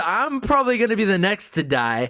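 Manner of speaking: ordinary talk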